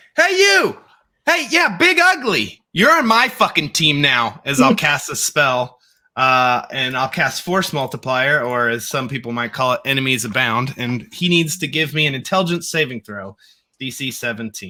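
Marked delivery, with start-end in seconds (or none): 0.2-4.4 very high, swooping shout. Player in a tabletop game calls out to an enemy creature, shouting. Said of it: "because I'm shouting over this".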